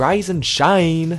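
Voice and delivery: put-on American accent. Doing an accent for a listener, the speaker performs a line in a put-on American accent. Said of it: "I'm going to do an American accent for Casey".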